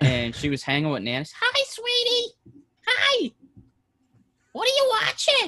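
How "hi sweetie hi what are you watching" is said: very high, slow, swooping, sing-song cartoon squeak. Imitating a visiting woman greeting Nana, in a Mickey Mouse voice. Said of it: "she sounds like Mickey Mouse".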